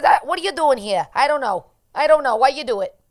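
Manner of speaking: put-on New York accent, laid on, loud and high. Retelling what they said to someone, the speaker does a New York accent. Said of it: "doing the New York accent".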